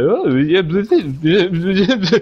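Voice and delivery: exaggerated, drawn-out mocking voice on blah.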